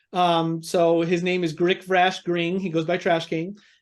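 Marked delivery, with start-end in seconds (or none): none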